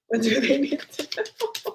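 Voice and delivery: talking while cracking up, laughing through words. Asking the cards a question after an amusing card came out, laughing while talking. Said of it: "I'm laughing at the".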